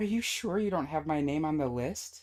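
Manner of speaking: play-acted, high, desperate pleading. Recalling a seventh audition, asking whether the name is on the list: retelling a desperate plea. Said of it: "I asked in a desperate voice".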